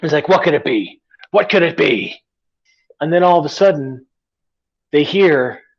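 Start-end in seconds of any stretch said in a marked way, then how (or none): 0.3-2.2 put-on irritated pirate voice. Retelling a story where Long John is ticked off: Long John ticked off. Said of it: "And so he's ticked".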